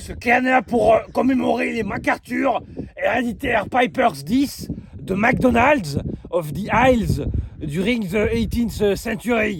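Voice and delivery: put-on Scottish accent. Asked to read a text aloud in their best accent, Scottish accent. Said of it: "avec ton plus bel accent euh, écossais?".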